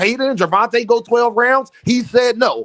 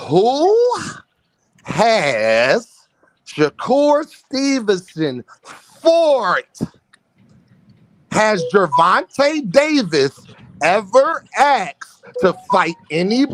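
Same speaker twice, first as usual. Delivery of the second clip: speech slowing down. Repeating a question to the panel, slowing down. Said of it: "let me slow down".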